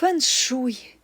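adoring, enraptured voice. Narrator reads the mother repeating her strange guest's word, adoring. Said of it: "в її голосі пролунала нотка обожнювання".

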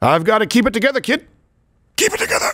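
teary, misty voice welling with emotion. Asked if santa gets a little misty-eyed, he answers the kid, misty-eyed. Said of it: "you don't think Santa gets a little misty-eyed?".

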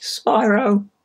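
voice cracking. Player starting a game as it loads, voice cracking. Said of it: "My voice cracked so hard just then".

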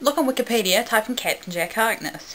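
plain reading voice

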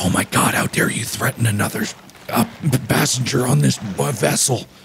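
half-audible whisper. A passenger in a role-play game answers a threat, in a whisper the captain can almost hear. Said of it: "In a whispered voice that the captain can almost hear".

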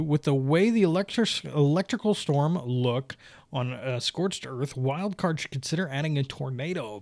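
plain

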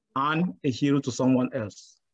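normal talking voice

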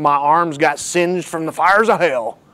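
joking put-on Southern US accent. Telling of nearly dying young, joking: put-on southern accent. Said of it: "a funny thing to say in a Southern accent".

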